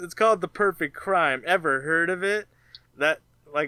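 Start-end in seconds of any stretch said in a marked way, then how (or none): none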